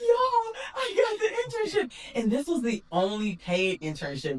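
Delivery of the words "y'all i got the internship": put-on very high voice, crying with joy. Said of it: "to the point where I'm crying".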